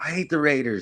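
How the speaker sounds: put-on high, play-acted child voice sobbing hard through words. Retelling a short video of a kid: imitating a crying kid. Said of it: "he's crying hella bad".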